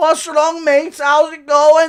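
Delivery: shrill, booming, very loud, high-pitched jeering. Acting out a predicted fight, Paddy Pimblett taunting his opponent: imitating Paddy Pimblett taunting. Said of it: "He's saying".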